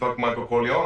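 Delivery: ordinary delivery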